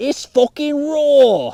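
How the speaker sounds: very loud, high, shrill furious scream, put-on accent. Acting out someone berating bad cooking: mock-angry, put-on accent. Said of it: "something like that".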